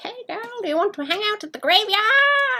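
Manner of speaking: very high-pitched cartoon skeleton voice. Imagining a skeleton flirting with someone: Skeletor's voice. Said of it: "Skeletor's voice".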